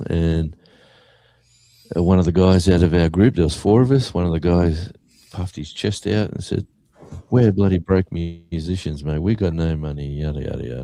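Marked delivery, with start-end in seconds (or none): none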